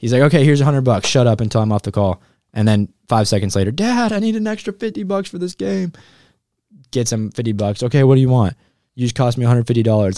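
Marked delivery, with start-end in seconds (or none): 7.8-10.2 mock yelling. Retelling a father yelling at the speaker's brother, imitating someone yelling. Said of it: "he's yelling at my brother now".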